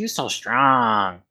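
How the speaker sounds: creepy admiring character voice. Voicing Meeker feeling a player's bicep: creepy Meeker voice. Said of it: "Why is Meeker getting creepy?".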